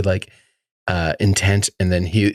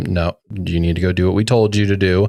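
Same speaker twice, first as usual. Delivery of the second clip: ordinary talk, nothing marked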